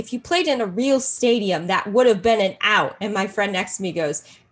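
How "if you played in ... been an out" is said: loud heckling yell over a cheering crowd. Recounting what they yelled at a game where nobody could hear: retelling a yell. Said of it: "So I had to yell".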